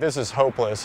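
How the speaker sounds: ordinary talk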